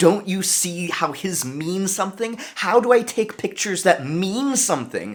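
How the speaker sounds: very high-pitched, urgent, voiced scream-whisper. Retelling showing their mom their photos during an artistic crisis, scream whispering. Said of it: "scream whispering".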